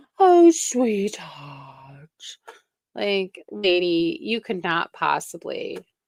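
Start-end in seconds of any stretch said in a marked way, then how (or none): 0.2-2.1 mock syrupy, over-sweet voice, louder. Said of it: "laying it on more thick".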